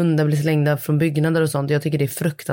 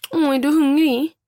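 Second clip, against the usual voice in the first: put-on drawn-out, high, slow babyish baby-talk voice; 11 semitones higher than usual. Asked what they say to them, the speaker demonstrates imitating baby talk. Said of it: "Typ såhär".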